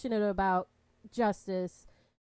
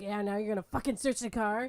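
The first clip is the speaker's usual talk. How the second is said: acted, nervous, passive-aggressive yell, half-laughing; 3 dB quieter than usual. Describing Jim reacting to a detective, imitating passive-aggressive Jim. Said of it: "He's getting all passive aggressive".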